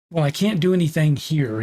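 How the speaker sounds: usual speaking voice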